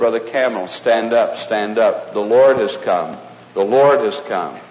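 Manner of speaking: plain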